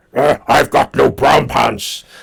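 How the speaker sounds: rough, goofy, loud, slow, creaky put-on voice. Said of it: "I can do all sorts of voices".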